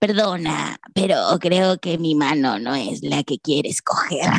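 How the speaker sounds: low, sepulchral voice from beyond the grave. Retelling how an old lady on a tour bus spoke: imitating a voice from beyond the grave. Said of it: "una voz de ultratumba que me dice".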